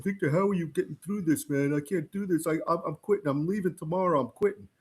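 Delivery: speaking while crying, through tears. Retelling how big football players came to him crying, imitating someone crying. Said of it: "they would come up to me crying".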